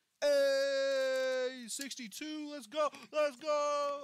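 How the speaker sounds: screaming into the mic. Cheering sixty-two during a game: screaming into the mic. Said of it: "I'm screaming, I'm screaming in the mic".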